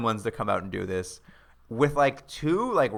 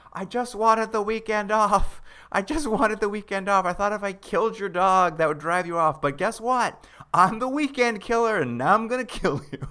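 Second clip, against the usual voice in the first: imitated tearful outburst, higher pitch; 9 semitones higher than usual. Retelling a film scene where a character starts crying: imitating a character crying. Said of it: "He just starts crying".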